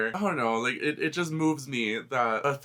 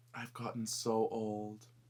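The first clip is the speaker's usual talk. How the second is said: very quiet, low, bittersweet, solemn acceptance; 4 semitones lower, 11 dB quieter than usual. Retelling what she said while looking at the picture, imitating solemn acceptance and happiness. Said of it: "this mixture of like solemn acceptance and happiness".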